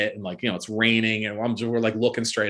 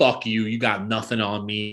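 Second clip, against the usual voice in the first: acted snarling voice. Retelling being approached by a cop, reenacting a snarl.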